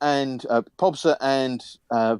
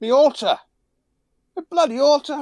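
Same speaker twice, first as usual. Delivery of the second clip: tiny, shrill, high, croaky little voice; 14 semitones higher than usual. Narrating a scene, the speaker voices a little voice behind the listener: croaky little voice. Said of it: "you can hear this little voice croak".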